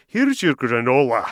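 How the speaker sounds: put-on Scottish accent, lilting and sing-song. Retelling a man setting down a bowl of muesli in scotland, scottish accent. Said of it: "in a Scottish accent".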